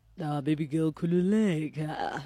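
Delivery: mock-seductive male voice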